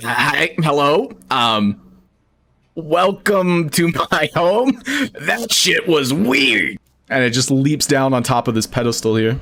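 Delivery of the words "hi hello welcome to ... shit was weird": very slow, nervous, wary creature voice. Voicing a creature that warily waves at the adventurers: wary creature greeting. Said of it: "waringly waves at you, like".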